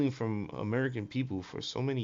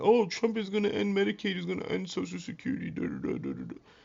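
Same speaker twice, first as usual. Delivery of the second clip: screaming, pitched-up, swooping alarmist rant; 8 semitones higher than usual. Mocking people on the left over Social Security: imitating people screaming. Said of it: "These people on the left was screaming".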